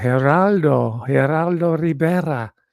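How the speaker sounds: fake Spanish accent and pronunciation on a name. Saying geraldo rivera's name with a fake spanish accent. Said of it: "I'm giving it a fake Spa- Spanish accent".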